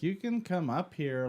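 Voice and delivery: mock, put-on awkward delivery. Retelling how she invited him upstairs: imitating someone speaking awkwardly.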